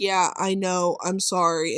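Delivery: low, slow, dull monotone with no inflection. Acting out how she answered an apology, in a flat monotone voice. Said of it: "like this monotone ass voice".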